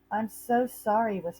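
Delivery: whispering. Narrator reading Harriet's line to Franklin in a story, whispering. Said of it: "whispered Harriet".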